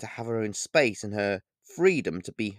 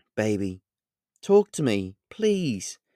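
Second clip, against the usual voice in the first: hushed, quiet voice, slow delivery. Pleading through a bedroom door with a daughter: hushed tone of voice. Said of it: "I said in a hushed tone of voice".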